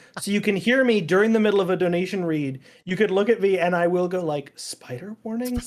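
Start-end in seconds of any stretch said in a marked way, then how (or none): 4.6-5.7 soft muttering under the breath. A stream host describes reacting during a donation read, retelling a mutter under breath. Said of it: "like under my breath".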